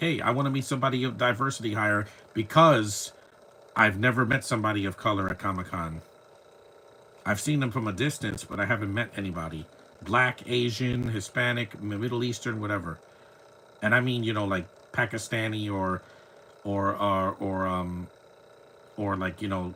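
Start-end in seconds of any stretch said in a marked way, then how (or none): none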